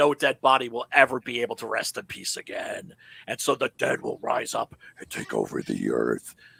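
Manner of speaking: puppet-style demon narration voice. Telling listeners what happens after midnight, in a Muppet demon voice. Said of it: "love it when you do your Muppet demon voice".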